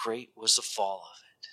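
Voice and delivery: soft, hushed repeat. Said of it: "And great was the fall of it".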